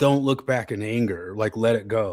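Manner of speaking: usual speaking voice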